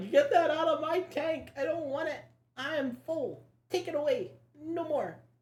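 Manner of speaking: very high, loud, huffy, indignant little pet voice. Retelling how the pet got mad at too much kale, imitating Gizmo angrily. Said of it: "He was like".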